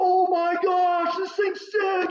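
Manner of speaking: very high, crazed, excited yelling. Retelling a baseball game, imitating a player yelling on first base. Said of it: "He's yelling".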